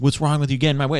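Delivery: put-on acted high, drunken yell. Retelling a bike crash, the drunk man yelling at the cyclist: imitating a drunk guy yelling. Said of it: "the drunk guy's like yelling at him".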